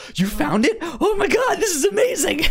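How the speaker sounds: overjoyed, disbelieving, high squeal of delight.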